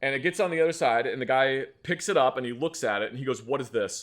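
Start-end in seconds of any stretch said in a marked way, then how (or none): 3.4-4.0 intensely accusatory, demanding tone. Retelling how a security guard questioned a flashlight: imitating an accusatory tone. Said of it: "With this incredibly accusatory tone".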